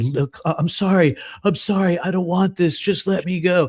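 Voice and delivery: desperate, apologetic, high-pitched pleading. Telling of a woman and a door he couldn't open, retelling begging her. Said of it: "I was literally begging her".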